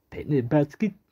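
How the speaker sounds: sloppy, bad cartoon-bear voice. Listing what they got, then slipping into a bad Yogi impression. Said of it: "that was a really bad Yogi impression".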